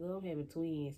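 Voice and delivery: ordinary talk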